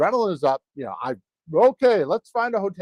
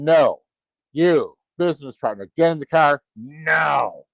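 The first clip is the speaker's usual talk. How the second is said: mock frightened, freaked-out voice; 3 semitones lower than usual. Retelling a scary night, imitating a freaked-out order to a business partner. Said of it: "I got freaked out".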